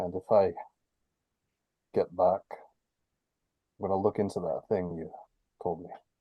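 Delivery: muttered quietly under the breath. Speaking in character after a sigh, to a companion: muttered under his breath. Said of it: "under his breath".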